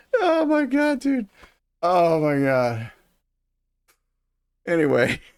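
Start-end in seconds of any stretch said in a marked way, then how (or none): 0.2-2.9 high, helpless hysterical laughing. Telling a story about a baffling conversation, laughing hysterically. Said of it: "laughing hysterically".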